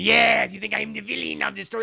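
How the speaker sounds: put-on Dutch accent. Riffing on movie casting, doing Tom Hanks's fake Dutch accent. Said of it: "would do his Dutch accent".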